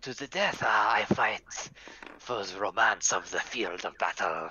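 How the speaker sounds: ridiculous put-on French accent, played for laughs. Asked if they are fighting to the death, a foreigner accepts in a ridiculous french accent. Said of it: "listen to his ridiculous accent".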